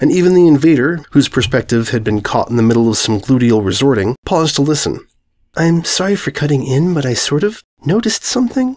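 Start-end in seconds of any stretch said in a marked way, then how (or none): 5.6-8.8 quiet, soft, much higher pitch. Reading a story, a character cuts into a conversation, speaking quietly. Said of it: "The soft yellow quietly said".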